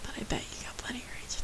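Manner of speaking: fast, hushed whisper.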